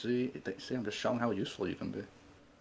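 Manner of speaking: very quiet, hushed, half-whispered aside. In character at a feast, half-whispering to Dax. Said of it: "I'm gonna whisper to Dax".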